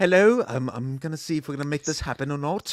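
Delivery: put-on Scottish accent. Imitating the host flipping up a cell phone: imitating Alan Cumming on the phone. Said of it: "flips up that cell phone, like".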